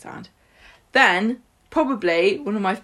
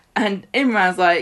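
usual speaking voice

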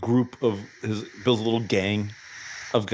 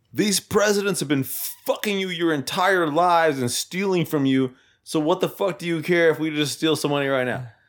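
mock shouted rant, high and ranting; 6 semitones higher than usual. Retelling a movie scene where a masked bank robber speaks: imitating someone yelling. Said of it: "yells out".

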